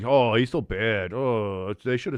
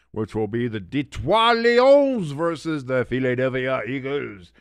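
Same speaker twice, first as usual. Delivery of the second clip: slow, drawn-out put-on French accent; 3 semitones higher, 3 dB louder than usual. Announcing which game will be covered tonight: put-on french accent. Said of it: "I do that in a French accent".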